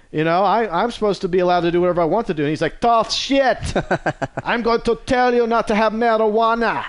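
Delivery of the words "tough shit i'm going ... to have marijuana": put-on Jamaican-Australian accent. Retelling the government's reply to a guy, in a Jamaican-Australian accent. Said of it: "I don't know where I was going with that Jamaican-Australian accent".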